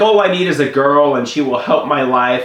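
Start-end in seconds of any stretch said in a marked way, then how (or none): none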